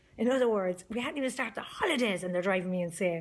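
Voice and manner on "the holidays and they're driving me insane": ordinary talk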